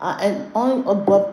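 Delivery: stuttering speech. Speaker talking to a livestream chat about co-parenting: stuttering. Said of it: "I don't know why I'm stuttering".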